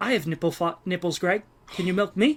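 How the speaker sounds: put-on gruff movie tough-guy voice. Quoting a line from Meet the Parents in a De Niro impression. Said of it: "that's my De Niro impression".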